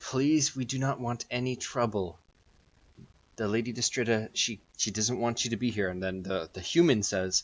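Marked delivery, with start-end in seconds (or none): 0.0-5.9 imploring, pleading, begging tone. Voicing an elf girl who squats to eye level: pleading tone. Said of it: "in kind of a pleading tone".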